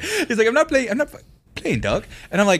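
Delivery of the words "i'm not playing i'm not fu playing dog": halting cartoon voice, tripping mid-word. Retelling a coworker insisting the news was true: Jimmy from South Park voice. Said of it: "he sounded like Jimmy from South Park".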